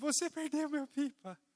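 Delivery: high, tearful, sobbing, crying voice. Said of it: "eu chorando".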